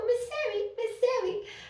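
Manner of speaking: put-on soft sweet child voice. A preschool teacher retells a child running over to her, imitating a soft, sweet child. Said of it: "Is that how he talks?".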